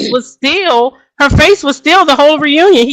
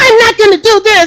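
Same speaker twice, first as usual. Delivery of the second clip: tearful emotional outburst. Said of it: "she's like".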